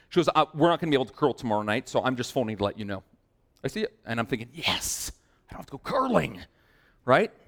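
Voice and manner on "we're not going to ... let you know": normal talking voice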